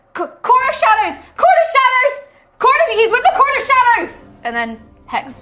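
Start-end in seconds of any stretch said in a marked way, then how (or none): 0.1-4.1 very loud, shrill, high, repeated yelling. Playing a character, the speaker shouts at everyone: shouting. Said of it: "I'm just going to shout".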